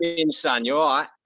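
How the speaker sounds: put-on loud, high South London accent. Trying out accents during an interview, greeting someone in a South London accent. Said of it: "South London".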